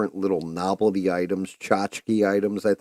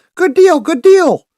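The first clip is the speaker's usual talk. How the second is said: very high-pitched, loud voice; 12 dB louder than usual. Act out a man telling John about last month's income, in a high-pitched Mr. Hankey voice. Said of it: "he had a very high pitched voice".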